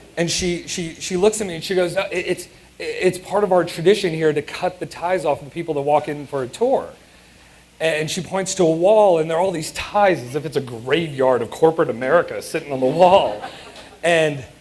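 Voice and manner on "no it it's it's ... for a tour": normal talking voice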